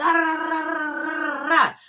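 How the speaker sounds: mock, high, babbling ramble.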